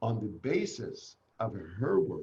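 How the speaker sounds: ordinary delivery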